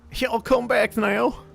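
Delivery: very high, hammed-up, put-on Southern accent. Wondering aloud what a southern accent would sound like, southern accent. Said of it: "Would would a southern accent be more like a".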